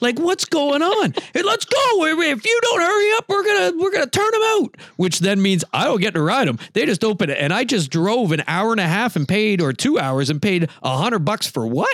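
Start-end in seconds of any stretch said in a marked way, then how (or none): 1.3-4.8 play-acted shrill screaming, pitched very high. Retelling the chute boss threatening to turn the bull out: imitating someone screaming. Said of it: "this guy's screaming at me".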